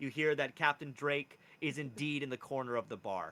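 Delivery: normal talking voice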